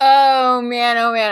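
slow words through helpless laughter. Reacting to the other speaker's interruption, laughing while talking. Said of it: "I'm already, like, tearing up from laughing".

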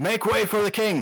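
bellowed at full volume, as loud as possible, pitched high. As his character comes around the corner, shouting as loud as he can. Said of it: "just shouts as loud as he can".

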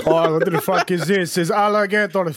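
put-on Finnish accent. Imagining people in Helsinki reacting to an alligator mascot, in a put-on Finnish accent. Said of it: "That wasn't a bad accent".

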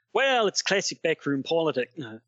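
put-on thickest, heavy Australian accent. Answering a request, speaking in the thickest australian accent. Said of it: "in your thickest Australian accent, please".

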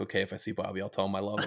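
mock deadpan delivery. Reviewing a show's line deliveries, a speaker quotes one, retelling a deadpan line. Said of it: "Just so deadpan".

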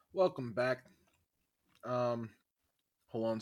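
talking while chewing, mouth full. Opening the episode while still chewing: talking while chewing. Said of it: "still chewing".

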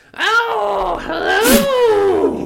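high screech with a drawn-out "oh". Asked what Dan's aunt sounds like, answering in her voice: Wicked Witch of the West voice. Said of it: "It sounds like the Wicked Witch of the West".

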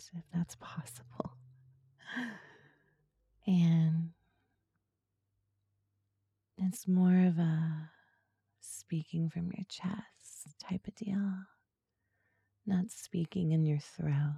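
soft, breathy, seductive asmr voice. Explaining how to make the voice while using it: soft breathy ASMR voice. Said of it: "I can't help it when I talk like this".

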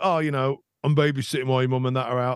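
put-on London accent. Retelling what the man who ran the local football team said, doing a London accent. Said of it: "I don't know why I did a London accent".

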